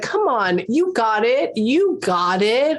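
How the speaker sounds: put-on, way-too-sarcastic sing-song cheering. Describing an annoying person cheering you on: imitating sarcastic encouragement. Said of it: "being way too sarcastic about it".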